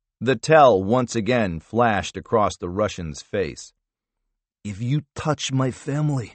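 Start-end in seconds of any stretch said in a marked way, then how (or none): 4.6-6.3 hissed, forced out through the teeth. Narrator voicing the Russian as he answers Harvath about his daughters: hissed. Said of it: "he hissed".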